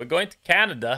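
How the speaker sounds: failed put-on Canadian accent, loud and high. Announcing a trip to Canada in a game: failed Canadian accent. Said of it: "That's not a Canadian accent".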